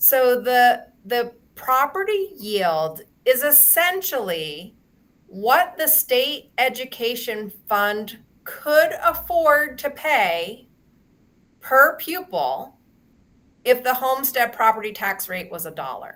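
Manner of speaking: deliberate, slow, careful word-by-word reading aloud. Reading a hard passage aloud so listeners can process it: reading slowly. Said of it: "So I'm gonna try and just read it slow".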